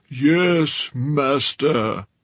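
zombie monster voice, first word stretched. He answers the narrator's advice in a zombie Frankenstein voice. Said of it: "He did a zombie Frankenstein voice".

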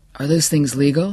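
ordinary delivery, nothing marked

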